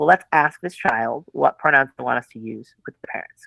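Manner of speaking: ordinary talk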